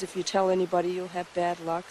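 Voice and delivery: ordinary talk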